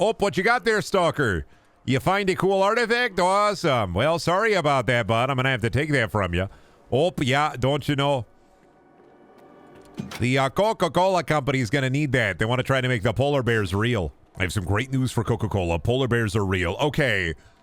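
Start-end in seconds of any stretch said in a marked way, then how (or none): 0.0-14.1 deliberately terrible, bad Midwestern accent. Improvising a character who addresses a stalker, in a terrible Midwestern accent. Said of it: "but in a terrible Midwestern accent".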